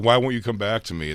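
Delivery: tearful, crying, pleading tone. Acting out a woman showing him around her house, imitating her crying. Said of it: "like crying".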